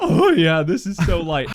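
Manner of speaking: loud voice crack. Imitating Jeff picking up the gun with a voice crack: imitating a voice crack. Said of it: "his voice cracks really hard".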